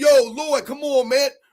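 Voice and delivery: cool, easygoing, relaxed, casual delivery. Retelling approaching a man who sat watching everyone work, retelling a cool, casual remark. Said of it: "I said it cool at first".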